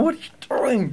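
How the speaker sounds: acted-out very high-pitched, exasperated, going-nuts disbelief. Retelling reacting to water tipped onto the carpet: imitating going nuts. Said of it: "I'm going nuts".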